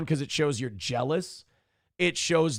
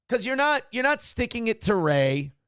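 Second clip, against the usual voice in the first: ordinary talk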